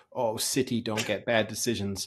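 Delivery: grumbling, mocking complaint tone. Mocking what Arsenal supporters say about refereeing: imitating Arsenal supporters complaining. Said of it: "there's that good accent work again".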